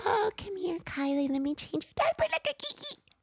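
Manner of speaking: put-on baby talk, very high pitch. Showing how talking to a baby would sound: mock baby talk. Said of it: "talk to them in a baby voice".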